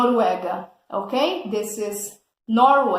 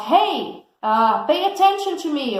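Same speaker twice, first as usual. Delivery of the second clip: yelling at a much higher pitch; 5 semitones higher than usual. Explaining the words yell and shout, demonstrating with an example: yelling. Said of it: "So I'm going to yell or shout".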